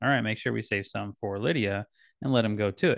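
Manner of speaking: normal talking voice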